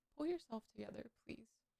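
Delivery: barely audible, very quiet, fighting off crying. A shaken streamer urges themself to pull together, fighting back tears. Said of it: "but I'm fucking traumatized".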